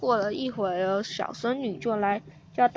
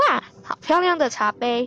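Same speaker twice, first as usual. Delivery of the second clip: ordinary delivery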